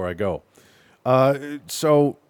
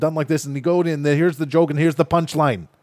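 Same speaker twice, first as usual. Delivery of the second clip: high, loud, fast-talking comic delivery. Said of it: "he's talking this fast".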